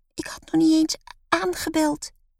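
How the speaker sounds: very high, squeaky, piping little voice. A character answers the beekeeper's question: squeaky voice. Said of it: "piept Lotte".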